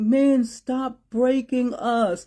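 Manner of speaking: acted tearful sobbing, high-pitched and pleading. Retelling what a young woman said to them, the speaker imitates her sobbing. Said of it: "she was really sobbing".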